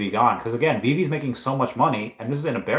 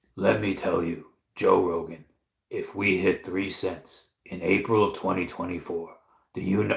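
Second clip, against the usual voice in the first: put-on storytelling comedian voice, leaning in, podcast-like; 4 semitones lower, 4 dB quieter than usual. Imitating a comedian talking to a podcast host about aliens: Joey Diaz voice. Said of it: "I can't even do his voice".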